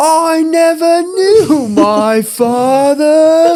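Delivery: very high, slow, loud, stretched-out cartoon shark voice. Quoting Finding Nemo while telling a story about a dad, doing a Bruce the shark impression. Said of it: "doing an impression of his voice".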